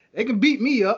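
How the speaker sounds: high, eager yes-man voice.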